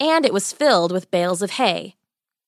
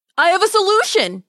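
very high, breathless, gasped-out delivery; 10 semitones higher, 3 dB louder than usual. Henry, just tumbled in through the window, speaks to Margaret, gasping. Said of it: "he gasped".

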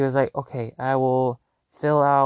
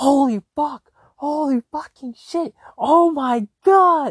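very high, very slow, drawn-out excited yelling; 13 semitones higher, 6 dB louder than usual. Retelling seeing own name on the trip list: imitating own excited yelling. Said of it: "I just started yelling in the car".

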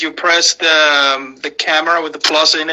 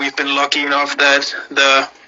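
ordinary talk, nothing marked

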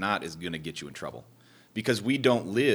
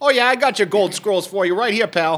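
put-on New Jersey accent; 12 semitones higher, 10 dB louder than usual. Friends riffing on an origin story set in New Jersey, in a New Jersey accent. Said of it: "still working a little deeper Newger- in there".

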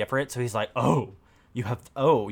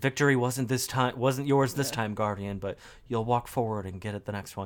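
put-on disappointed voice, quieter; 5 dB quieter than usual. Describing a game character's lines to another speaker: imitating Shaxx sounding disappointed. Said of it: "he sounds, like, disappointed in you, where he's like".

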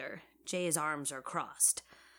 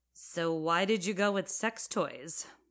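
ordinary delivery, nothing marked

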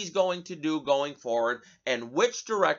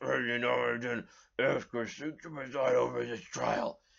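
low, creaky, crackling, worn-out voice; 4 semitones lower, 6 dB quieter than usual. Quoting a senator's trial statement the way he talks: Patrick Leahy impression. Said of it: "he talks like this".

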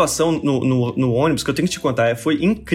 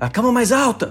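mock shout, yelling, much higher pitch; 8 semitones higher than usual. Retelling how a professor shouts to the anesthetist mid-surgery, retelling a shout. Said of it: "ele grita pro anestesista".

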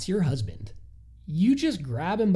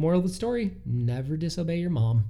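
normal talking voice

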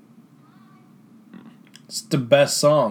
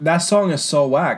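normal talking voice

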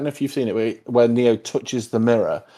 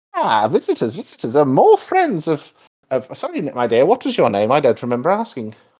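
put-on swooping elderly woman character voice; 3 semitones higher than usual. Describing a game as an old woman comes down the stairs, old woman voice. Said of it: "you hear this old woman like coming down the stairs".

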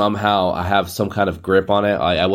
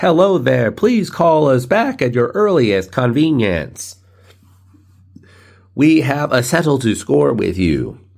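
canned, pitched-up robocall customer-service voice; 5 semitones higher than usual. Retelling the spam voicemails on the phone: imitating a spam voicemail. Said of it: "I get so many spam. It's like".

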